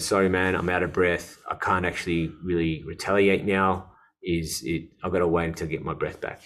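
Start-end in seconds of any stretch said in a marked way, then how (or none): none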